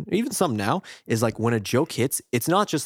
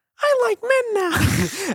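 very high, slow, drawn-out cartoon voice; 4 dB louder than usual. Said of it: "He talks like this".

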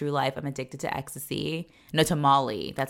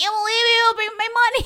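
mock tantrum yelling, higher and louder; 8 dB louder than usual. Retelling a woman's tantrum while demanding money from a friend: imitating a tantrum. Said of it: "And it's how she sounds. She's like".

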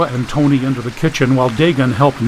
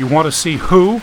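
ordinary delivery

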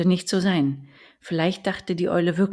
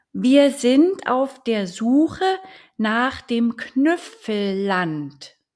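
very slow, exaggerated enunciation, high and at full volume; 6 semitones higher, 5 dB louder than usual. A little duck answers an old owl's question, as loud as possible, overly clear. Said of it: "so laut sie konnte und überdeutlich".

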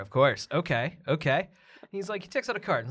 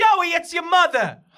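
shrill, very high, very loud screaming; 14 semitones higher, 9 dB louder than usual. In a comedy bit, a mother at a party spots her son Joey, screaming for him. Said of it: "why is this woman screaming for him".

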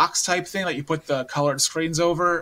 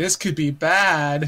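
sluggish, slow, badly stretched-out delivery; 4 dB louder than usual. Retelling a scene with a hamster, imitating her slow talking. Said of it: "because she talks really slow like that too".

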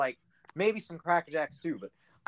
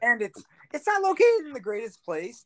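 voice cracking high in the middle of a sentence; 6 semitones higher than usual. Speaker describing a ballpark they toured, voice crack. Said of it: "That was a big voice crack".

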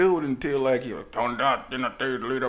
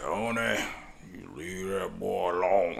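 slow, raspy, stern, weighty but not mean voice; 6 semitones lower, 5 dB quieter than usual. Recalling how a man from church used to speak: imitating a booming sandpaper voice. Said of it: "it sounded like sandpaper".

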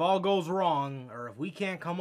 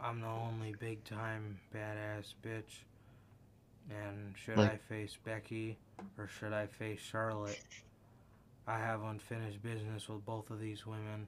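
dull, bored deadpan monotone drone with no lift; 4 semitones lower, 11 dB quieter than usual. Imitating a woman who just stood there talking, in a mock-bored monotone. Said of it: "she looked so fucking bored ... talking so monotone".

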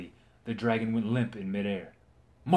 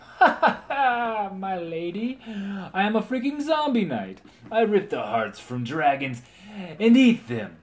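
very high, loud triumphant boast through laughter; 9 semitones higher, 5 dB louder than usual. A knight answers a stunned lady's question, with a triumphant laugh. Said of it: "With a triumphant laugh".

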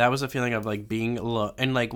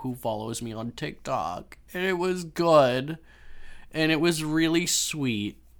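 talking tearfully, crying through the words; 4 semitones higher than usual. Getting emotional while talking about someone loved, crying while talking. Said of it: "I'm literally crying right now".

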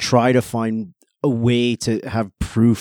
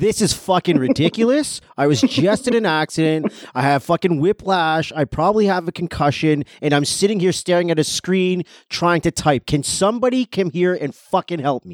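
play-acted grating, obnoxious, very loud, shrill, drawn-out rant; 7 semitones higher than usual. Showing how to complain about having to stand after an accident: very loud and annoying. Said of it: "you say it in a very loud and annoying way".

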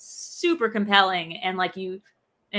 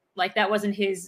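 normal talking voice

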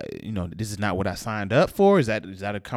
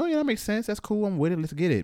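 much higher, chirpy, breezy, agreeable voice. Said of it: "I was like".

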